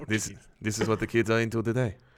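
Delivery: put-on Mexican-accented character voice. Playing a doctor character, the speaker tries a mexican accent voice. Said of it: "how do I get into a Mexican voice".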